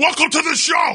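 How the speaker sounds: very fast, very high-pitched shouted delivery. Co-host asked to talk really fast, opening the show talking really fast. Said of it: "Talk like really fast with me".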